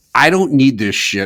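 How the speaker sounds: mock yelling, a really loud outburst. Speaker retells finally snapping during a yelling argument with a man, retelling a loud outburst. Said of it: "really loudly".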